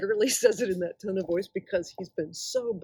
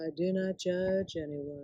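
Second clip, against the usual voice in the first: soft, stoned-sounding calm, utterly unbothered; 2 semitones lower, 5 dB quieter than usual. Act out how you imagined Jesus when hearing the flannel graph stories, in a stoned Jesus voice. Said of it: "like on like a microdose of Xanax".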